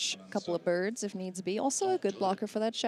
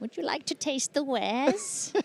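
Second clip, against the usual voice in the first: high-pitched goblin character voice; 6 semitones higher, 4 dB louder than usual. During a card game, a player speaks as a card character; Auntie Goblin voice. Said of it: "You got a great Auntie Goblin voice".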